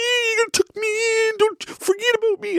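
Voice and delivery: put-on very high, silly, squeaky stuffed-animal voice. Retelling a daughter voicing a toy hippo at tuck-in: imitating daughter voicing Steve. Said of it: "the hippo Steve would be like".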